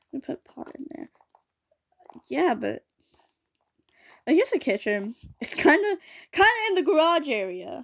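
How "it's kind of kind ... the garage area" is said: high-pitched yelling. The speaker describes where things are in her place, yelling. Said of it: "I don't know why I'm yelling".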